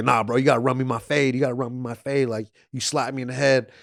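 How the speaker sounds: put-on drunken talking. Retelling what a drunk guy in a clip kept saying: imitating a drunk guy. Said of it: "he's so drunk, he can't understand".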